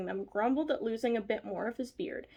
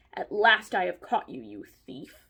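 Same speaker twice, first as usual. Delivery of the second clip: low, growling bear voice; 4 semitones lower, 4 dB louder than usual. A bear lays its paw on a dwarf's shoulder and speaks to him, growling. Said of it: "he growled".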